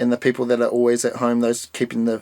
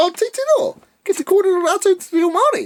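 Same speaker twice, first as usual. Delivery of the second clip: put-on very high, coaxing voice for small children; 3 dB louder than usual. Retelling their own reaction to kids speaking te reo on the mountain, high-pitched voice. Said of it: "Your voice just went so high".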